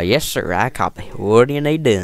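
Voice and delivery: put-on country voice. Showing how he likes to disguise his voice, as Sergeant Millard, the country guy: Sergeant Millard country voice. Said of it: "that was just, you know, country voice".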